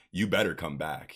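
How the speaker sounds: ordinary delivery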